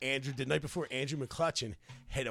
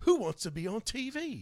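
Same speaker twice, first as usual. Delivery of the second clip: very bad fake English accent, high and slow; 8 semitones higher than usual. Comic retelling a man who approached at a beach restaurant, in a bad English accent. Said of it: "That was the worst accent ever".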